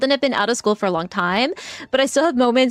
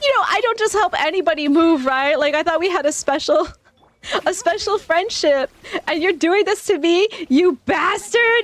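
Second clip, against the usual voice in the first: mock desperate begging, higher; 6 semitones higher than usual. Retelling how the book's character begs the reader to stop: imitating desperate pleading. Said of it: "increasingly more desperate".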